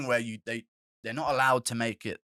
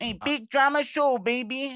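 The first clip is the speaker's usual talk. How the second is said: very high-pitched, weird put-on voice; 14 semitones higher, 4 dB louder than usual. Showing the others how a Hawaiian man sounds, imitating a weird, high-pitched voice. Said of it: "It's kind of a weird, high-pitched tone".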